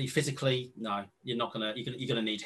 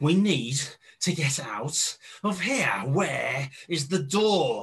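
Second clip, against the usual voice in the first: enraged, raging, raised voice; 2 semitones higher, 5 dB louder than usual. Voicing a man who finds all the doors sealed and turns on you: enraged. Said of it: "turns and looks at you with pure rage on his face, starts going".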